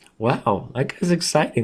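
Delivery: voice cracking and breaking like puberty. Reacting to an opponent's username during a chess game, voice cracking. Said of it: "Look at my voice crack".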